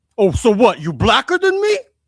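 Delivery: high, loud, slow squeal. Retelling a backstage comedy story, quoting Tracy: shitty Tracy impression. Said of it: "My shitty Tracy impression".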